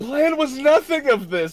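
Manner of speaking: very high, loud, dazed and bewildered voice. Playing Zol after being slapped and dragged through a portal, dazed Zol. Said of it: "still a little bit dazed".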